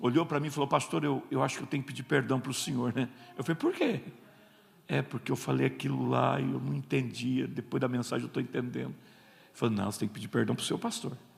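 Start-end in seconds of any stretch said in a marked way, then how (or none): 0.7-2.9 imitated deflated, crestfallen man's voice. Pastor retelling how a deflated man came up to him afterward; imitating a deflated man.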